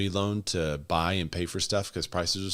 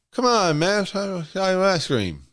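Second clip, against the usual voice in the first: pushed way up, very high-pitched and loud; 12 semitones higher, 8 dB louder than usual. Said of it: "Now you'd say".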